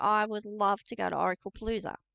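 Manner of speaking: ordinary talk, nothing marked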